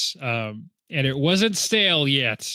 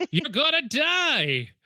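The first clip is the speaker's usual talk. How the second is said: put-on crazy old man voice, higher pitch; 13 semitones higher than usual. Retelling a movie scene, imitating a crazy old guy warning. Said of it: "a crazy old guy who shows up".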